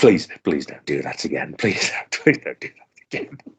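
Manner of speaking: mock pleading tone through barely held-in giggles. Retelling how a boss scolded while giggling: imitating someone giggling while talking. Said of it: "he was obviously giggling as he was, like, saying".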